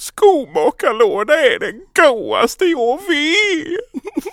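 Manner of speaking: put-on near-tears Gothenburg accent, very high and very slow. Retelling a man at the book fair exclaiming, imitating weepy Gothenburg dialect. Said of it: "låter som att man alltid ska vara på väg att börja gråta".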